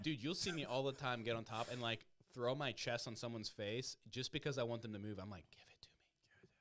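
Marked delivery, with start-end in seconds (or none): 5.5-6.5 unvoiced whisper, very soft. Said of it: "I'll whisper in there".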